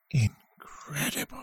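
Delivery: very quiet, rasping whisper. Narrator reading Mahal's reaction line in the story; Mahal's raspy whisper. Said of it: "Mahal said in a raspy whisper".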